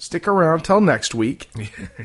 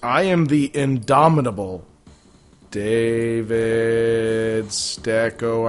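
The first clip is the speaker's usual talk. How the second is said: deep, low, deliberate, very slow, drawn out. Introducing yourself at the end of an episode: saying it really low and slowly. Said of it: "I'm saying it really low, slowly".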